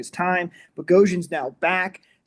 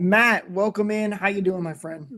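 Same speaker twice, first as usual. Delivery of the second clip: eager, excited tone laced with anger; 3 semitones higher than usual. [name] welcoming Matt in, excitement mixed with some anger. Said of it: "excitement mixed with some anger".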